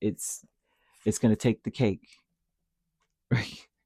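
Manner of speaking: talking through laughter. Giving a reading to a listener, laughing while talking. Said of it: "I'm sorry for laughing".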